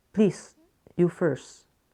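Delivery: ordinary delivery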